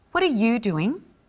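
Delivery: curious, inquisitive, genuinely interested tone. In a lesson on inflection, asking a partner what they're doing, with a curious, interested question. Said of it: "asking a question, being curious and interested".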